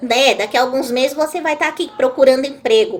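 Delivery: ordinary delivery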